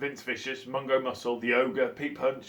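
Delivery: ordinary delivery, nothing marked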